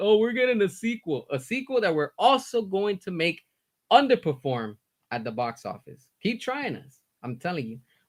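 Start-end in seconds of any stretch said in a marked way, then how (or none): 0.0-1.3 snide, derisive, sneering tone, acted, pitched up. Mocking what the James Gunn fans love to say: mocking imitation of fans. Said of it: "And they're always like".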